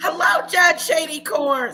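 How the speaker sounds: shouted, loud, high-pitched yell. Greeting someone by name during a live: yelling a greeting. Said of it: "Sorry, I didn't mean to yell".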